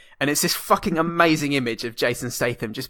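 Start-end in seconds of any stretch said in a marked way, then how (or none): none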